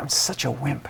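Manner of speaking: mock muttering under breath. Retelling what a father said to himself: imitating a remark muttered under the breath. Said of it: "almost under his breath".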